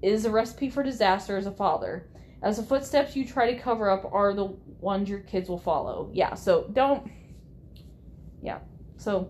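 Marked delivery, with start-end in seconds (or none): none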